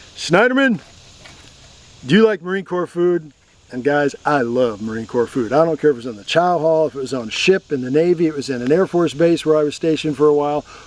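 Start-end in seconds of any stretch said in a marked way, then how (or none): 0.2-3.4 acted, high-pitched, pointed tone. Retelling what a man said to the speaker in the chow line: loud voice. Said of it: "in a real loud voice".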